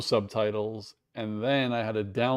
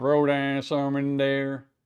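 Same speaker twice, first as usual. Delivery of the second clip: terrible put-on Louisiana Cajun accent; 3 semitones higher, 3 dB louder than usual. Imitating a viral Cajun guy cooking in a big giant pot, in a terrible Cajun accent. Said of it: "that's a terrible accent".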